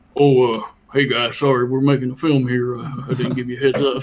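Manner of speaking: put-on thick, laid-on northern Alabama accent. Quoting the kid who wrote the film apologizing to people, in a thick northern alabama accent. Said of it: "very thick uh, northern Alabamian accent and go".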